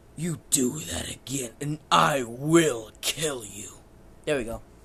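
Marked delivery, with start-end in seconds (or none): 0.2-3.7 sinister, loud, very slow and drawn out. Speaker repeats a character's threat in a sinister Vegeta voice. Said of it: "I'm gonna say in a sinister voice".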